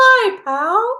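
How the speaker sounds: squeaked out in falsetto. Opening a new show with a co-host, quoting Mickey Mouse: Mickey Mouse impression. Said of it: "like Mickey says".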